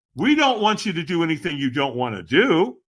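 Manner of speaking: ordinary talk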